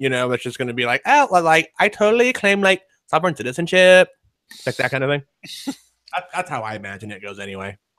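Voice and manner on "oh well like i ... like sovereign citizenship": high, vapid, ditzy airhead voice. Imagining what some airhead would say: ditzy airhead voice. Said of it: "some airhead".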